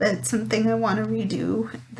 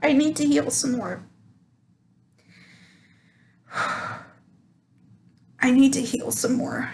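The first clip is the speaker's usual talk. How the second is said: in tears, weeping, crying through the words; 4 semitones higher than usual. Answering their own question about what they learned, while crying. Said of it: "oh my God, I'm crying".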